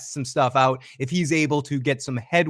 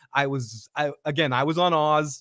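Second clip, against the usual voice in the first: ordinary delivery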